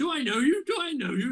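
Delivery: put-on gruff British accent, pitched a bit high. Retelling meeting Hitchens, quoting his reply in a gruff British Hitchens impression. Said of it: "In like this really gruff British voice".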